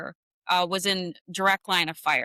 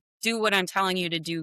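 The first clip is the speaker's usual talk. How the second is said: ordinary delivery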